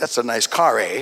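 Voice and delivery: Canadian accent with eh tag at the end. Showing how Canadians talk with long vowels: Canadian accent. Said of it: "Canadians have their own accent".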